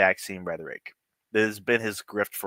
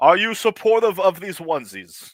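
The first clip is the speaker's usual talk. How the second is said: very high, loud, raised voice with swooping pitch; 10 semitones higher, 6 dB louder than usual. Act out the question for a future wife while shopping for a newborn, in a Bernie voice. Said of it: "Just do it in a Bernie voice".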